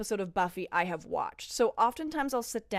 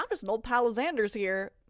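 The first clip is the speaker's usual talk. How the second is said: put-on American accent. Retelling a scene where Spike speaks: imitating Spike's Americana accent. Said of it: "Americana accent".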